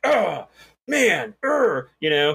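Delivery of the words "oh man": really mad, angry voice, pitched up. Speaker imitates a cussing guy playing at the next machine, retelling someone real mad. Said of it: "he's like just cussing and he's like real mad".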